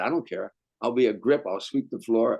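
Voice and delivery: ordinary delivery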